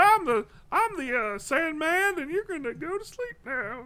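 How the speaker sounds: growly put-on voice. Showing the others a Bobcat Goldthwait impression after being asked: Bobcat Goldthwait voice. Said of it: "Enjoying my Bobcat Goldthwait impression".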